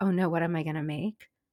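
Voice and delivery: ordinary talk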